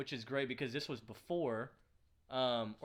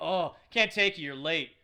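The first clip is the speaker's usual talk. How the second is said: mock-snarky tone, louder; 2 semitones higher, 7 dB louder than usual. Acting out a dad speaking to his son, mimicking a snarky dad. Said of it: "his dad's just being snarky".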